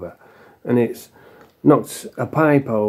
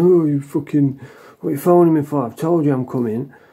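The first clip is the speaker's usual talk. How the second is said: put-on snappy, short-tempered, irritated tone with attitude; 3 semitones higher than usual. Retelling a drug dealer's phone reply: imitating someone with an attitude. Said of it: "And then I get an attitude".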